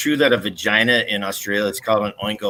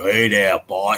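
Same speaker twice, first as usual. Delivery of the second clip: Boston way of talking. Speaker imitating the accent that bothers him most: Gary Snowflake's Boston accent. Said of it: "the Boston freaking thing".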